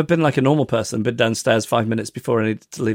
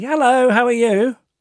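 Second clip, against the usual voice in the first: put-on light, airy, very high, breezy tone; 12 semitones higher, 4 dB louder than usual. Retelling greeting the cleaner while rushing out: imitating own breezy greeting. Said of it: "a breezy".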